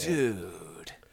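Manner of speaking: very quiet, drawn-out, sad, downtrodden voice. Explaining that d stands for dude, with a sad, downtrodden 'dude'. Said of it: "like in a sad, downtrodden".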